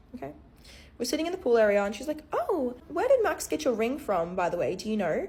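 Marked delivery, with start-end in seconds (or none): 2.3-5.3 acted, very condescending, swooping sing-song tone. Retelling what a visiting friend said in the pool area, imitating a condescending tone. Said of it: "In the most condescending tone you've ever heard".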